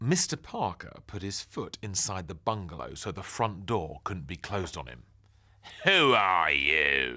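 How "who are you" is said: low, loud nasal bark, "you" drawn out. Mister Parker puts his foot in Ben's doorway and demands: nasal bark. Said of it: "He barked nasally".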